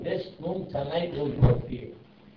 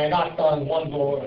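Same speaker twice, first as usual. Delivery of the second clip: ordinary talk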